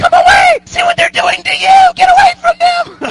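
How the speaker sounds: put-on very high, loud screaming in girls' voices.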